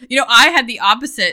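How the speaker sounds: talking through laughter.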